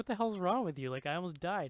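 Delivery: furious, angry yelling outburst. Retelling how a man who nearly drowned screamed at them: retelling someone screaming. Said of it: "he's like screaming at them".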